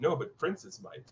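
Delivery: soft whisper close into the ear. Voicing a character who whispers in a player's ear: whispering. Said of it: "Llewellyn whispers in your ear".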